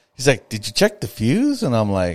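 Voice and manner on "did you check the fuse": put-on exasperated, annoyed, very high-pitched voice. Retelling a phone call where the other person asked: imitating an annoyed voice. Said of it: "in the most annoyed voice".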